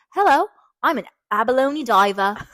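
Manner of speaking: put-on Australian accent, a best attempt. Imitating an Australian guy who was an abalone diver: Australian accent. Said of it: "this is the only way I can do an Australian accent".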